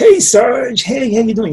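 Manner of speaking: very high-pitched, loud, wacky marine character voice. Quoting a film Marine in a wacky Marine voice: Bill Paxton voice. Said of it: "the classic Bill Paxton, Aliens".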